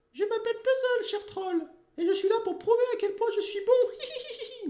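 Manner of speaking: high, loud, mocking, sneering voice. Narrator reads the ventriloquist's puppet addressing the troll guard, in Puzzle's mocking puppet voice. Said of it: "dit-il d'une voix moqueuse".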